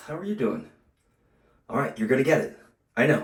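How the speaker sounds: slightly winded, breathing hard. Mid-workout, the speaker talks to the listener while a little out of breath. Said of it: "I'm a little out of breath".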